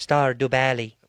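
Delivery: put-on mechanical, robot-like voice. Naming the one game they'd want on a Switch, speaker uses a robotic voice.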